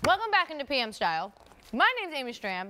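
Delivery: talking with mouth full while chewing. Host welcoming viewers back to the show, with a mouth full. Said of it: "My mouth is full with Courtney's birthday cantaloupe".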